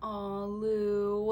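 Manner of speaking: mock-sympathetic cooing aw. Recalling coming home upset, the speaker quotes the mom, imitating mom's sympathetic aw. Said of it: "she was like".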